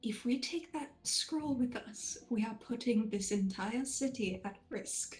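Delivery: very soft, gentle, softly spoken voice. A player's character speaks to the group in a very soft voice. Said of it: "she says this in a very soft voice".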